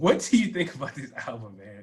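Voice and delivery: talking through laughter. Asking the other speaker about an album, laughing while talking. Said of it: "Why are you laughing?".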